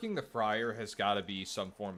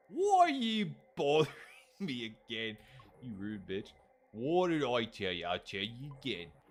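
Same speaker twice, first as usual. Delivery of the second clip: struggling, attempted put-on British accent; 2 semitones higher, 3 dB louder than usual. Repeating a character's instructions, the speaker tries an accent: attempted british accent. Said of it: "I'm trying to do a British accent".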